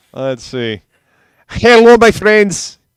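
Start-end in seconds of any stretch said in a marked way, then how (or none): 1.4-2.7 bad, very high, loud, fake Mexican accent. Speaker tries a greeting in their worst fake Mexican accent. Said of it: "In my worst fake Mexican ac- accent".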